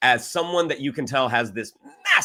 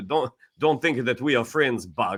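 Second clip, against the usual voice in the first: put-on thick, heavy Russian accent. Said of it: "that thick Russian accent".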